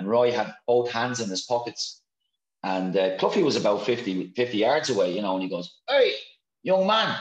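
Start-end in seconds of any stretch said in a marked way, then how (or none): 5.9-7.2 very high-pitched calling out. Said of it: "when they hear that voice".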